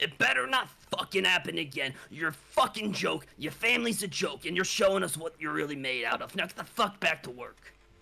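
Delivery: furious, hot-headed angry character voice. Voicing a hot-headed drunk boss scolding a worker: hot-headed angry boss voice. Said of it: "he is a very hot-headed fellow who is pissed".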